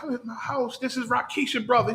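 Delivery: hushed voice like stage whisper. Retelling a prank call made from a closet: imitating someone half-whispering. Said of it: "and he whispered".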